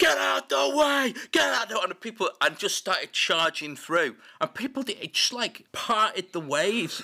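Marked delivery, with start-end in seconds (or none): 0.0-1.7 acted, very high, rough, drawn-out scream. Speaker retells pushing through a crowd to the stage, retelling a scream. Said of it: "started screaming".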